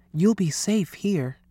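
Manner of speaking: hushed whisper. Lewis has smuggled Alphonse into the school pool and reassures him: whispered. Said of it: "whispered Lewis".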